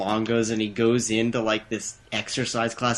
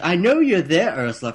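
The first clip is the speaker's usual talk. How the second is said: put-on British accent, high and loud; 7 semitones higher, 5 dB louder than usual. Retelling a movie scene, a mother's answering-machine message: imitating a british accent. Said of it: "she had a British accent".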